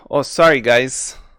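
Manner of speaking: bad fake Russian accent drifting into North Dakota accent. His firebolt smashes on the rock, and he speaks up: bad russian accent. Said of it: "That's my Russian. It's ter- terrible Russian".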